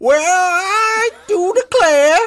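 very slow, very high, put-on old-timer prospector voice. Playing a fake audio clip, doing an old prospector voice. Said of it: "I don't know why I went prospector".

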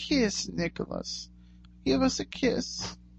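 put-on high, very soft old woman's voice. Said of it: "an old woman in a very soft voice say".

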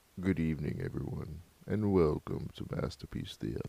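breathy, soft, hushed voice, badly done. Opening the show while trying a James Earl Jones voice. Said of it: "I was trying to get my James Earl Jones on".

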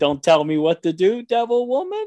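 rising, question-like tune on woman. Retelling a line he said, as his wife described it, said like a question. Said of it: "he said it like almost like a question".

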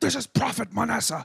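wild, rasping, very high, very loud crazy voice. Retelling a voicemail from a caller, imitating Prophet Manasseh's crazy voice. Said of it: "he had like a really crazy voice".

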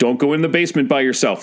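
ordinary talk

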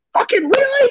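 put-on shrill, very high, loud holler. Retelling letting in a bad goal and the coach's reaction: imitating Coombs calling out loudly. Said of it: "And just echoes in the whole building".

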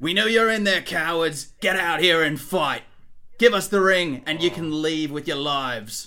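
loud, menacing, threatening voice. In a tabletop game, voicing the half-orc, in a half-orc character voice. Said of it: "And the half orc says".

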